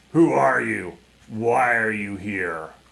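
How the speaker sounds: growling, menacing beast voice. A figure steps out of the gloom ahead and challenges the party, growling. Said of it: "it growls out to you".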